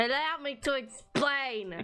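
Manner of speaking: called out like a host. Explaining a mysterious green lump right into a co-host's ear, yelling. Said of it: "Can you not yell in my ear".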